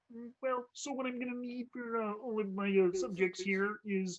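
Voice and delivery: frog puppet voice. Showing a king character talking to players: Kermit the Frog voice. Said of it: "It's straight up Kermit".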